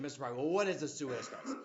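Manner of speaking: ordinary talk, nothing marked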